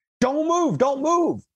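acted full-force scream, shrill, very high pitched. Retelling a SWAT officer with a boot on his chest, imitating an officer's screaming. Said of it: "he's screaming at the top of his lungs".

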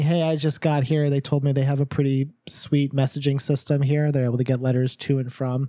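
plain

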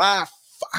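put-on furious scream. Retelling screaming out loud while working at the restaurant; retelling an angry scream. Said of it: "you hear me scream out loud".

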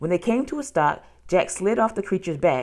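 ordinary delivery

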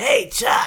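very high, loud smoker and biker chick voice. Recalling Peppermint Patty, calling out to Chuck in Peppermint Patty's smoker's voice. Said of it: "like, smoker's".

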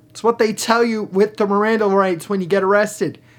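ordinary delivery

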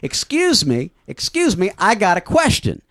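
slow, stretched-out, loud yelling call. Retelling a gal interrupting the closing song: imitating someone yelling loudly. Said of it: "starts yelling at the top of her voice".

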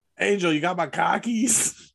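attempted Boston accent. Admitting they don't know how to do it, trying a boston accent. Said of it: "we're going to do our best Boston accent".

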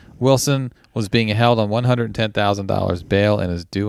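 ordinary talk

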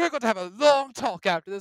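loud, high-pitched scolding yell. Retelling a game character's reaction after firing back: imitating someone yelling. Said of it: "head lady of Constellation's yelling at me".

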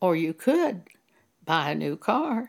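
acted calm, soothing suggestive tone. Retelling hearing a word from God while considering car upholstery: imitating God's unpushy suggestion. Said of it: "he said it in this tone of voice".

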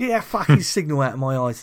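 put-on loud London Cockney accent. Joking about a Cockney Batman, as Danny Dyer: Danny Dyer impression. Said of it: "That was quite a good Danny Dyer".

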